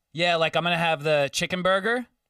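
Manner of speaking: laid-back, relaxed, casual regular-customer way of talking. Retelling a diner customer's order as a waiter: imitating the customer's way of talking. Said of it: "This is how he talked".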